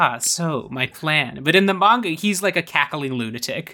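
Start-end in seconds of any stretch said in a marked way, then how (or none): 0.0-1.4 silky, smooth-talking villain drawl, very slow. Imitating the movie villain Nova's way of talking: smooth-talking villain voice. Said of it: "a smooth talking, like".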